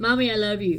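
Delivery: normal talking voice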